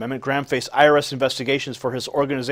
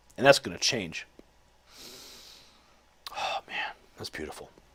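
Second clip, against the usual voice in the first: emotional, hushed, choked-up whisper; 3 semitones lower, 9 dB quieter than usual. Addressing listeners right after sharing news they welcome: choked up. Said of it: "I'm getting all choked up here".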